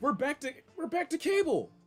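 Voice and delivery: voice cracking mid-line, jumping high. Speaker complaining about streaming services, voice cracking. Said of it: "Sorry that my voice cracked".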